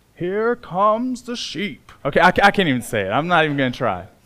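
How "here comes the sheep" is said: put-on slow British nature-documentary narrator accent. Quoting what he says on Planet Earth when wolves attack a herd, in an attempted British accent. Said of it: "he says in this wonderful British accent".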